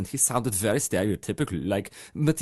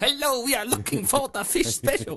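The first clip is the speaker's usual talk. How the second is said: worst put-on Vietnamese accent, very high. Teasing a companion about how he talked at a Saigon bar: bad fake Vietnamese accent. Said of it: "which is the worst Vietnamese accent ever".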